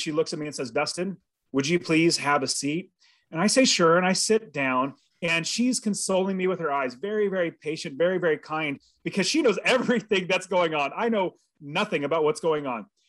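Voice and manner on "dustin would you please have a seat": put-on sheepish, timid asking tone. Retelling what his boss's secretary said to him, imitating a sheepish request. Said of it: "And sheepishly".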